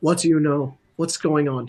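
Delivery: hushed whispering. Speaker pulls him aside from everybody else on stream; hushed whisper. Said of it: "kind of in a hushed tone, but I can actually whisper".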